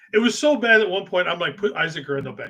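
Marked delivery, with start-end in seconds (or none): none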